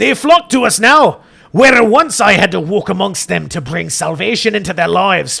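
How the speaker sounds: put-on voice in a Scottish accent. Reading a character's lines aloud at someone's request: Father Jeremiah, Scottish accent. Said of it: "Deanna wanted a Scottish accent".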